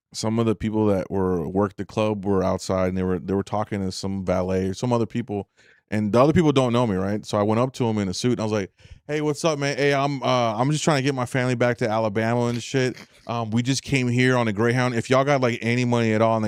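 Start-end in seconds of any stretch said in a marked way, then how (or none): none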